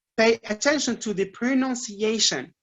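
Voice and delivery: ordinary talk, nothing marked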